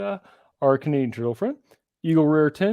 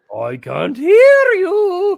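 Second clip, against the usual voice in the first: very slow, very loud, high, swooping, drawn-out pirate yell; 9 dB louder than usual. Calling out to another speaker in a SpongeBob pirate voice. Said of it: "was my accent more SpongeBob pirate than Irish".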